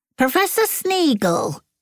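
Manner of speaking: very high, rasping voice. A narrator reads a figure suddenly calling out a professor's name: high, rasping voice. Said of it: "said a high, rasping voice".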